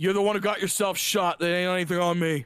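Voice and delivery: put-on sixty-year-old man voice. Voicing a stranger calling out through the garden: old man NPC voice. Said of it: "you guys hear a voice come through the garden going".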